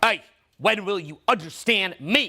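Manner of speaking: sharp, cutting, low voice. Voice practice, copying another speaker's level of sharpness in a sharp voice. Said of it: "copy his level of sharpness in the voice".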